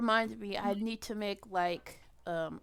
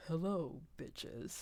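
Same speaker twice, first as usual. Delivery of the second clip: as deep as possible, breathy near whisper; 4 semitones lower, 10 dB quieter than usual. Asked to say the greeting in the deepest voice ever, very deep voice. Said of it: "make it like the most deep voice thing ever".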